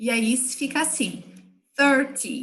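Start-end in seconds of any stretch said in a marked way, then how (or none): 1.8-2.4 "thirty" stressed on the first syllable "thir". Teaching english numbers to portuguese speakers, stress on thir in thirty. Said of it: "a sílaba forte vai ser a primeira".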